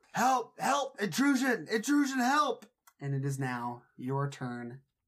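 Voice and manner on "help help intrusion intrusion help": very high, very loud yell. Voicing a character who breaks free and raises the alarm: yelling for help. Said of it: "And he yells out".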